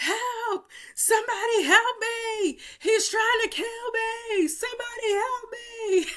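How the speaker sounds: put-on very high, drawn-out, desperate scream. Retelling running down a hallway away from an attacker: retelling a scream for help. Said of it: "running down the hallway screaming".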